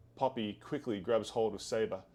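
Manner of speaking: normal talking voice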